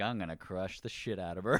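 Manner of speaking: normal talking voice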